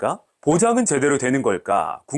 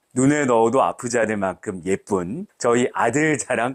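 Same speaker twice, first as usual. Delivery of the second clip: normal talking voice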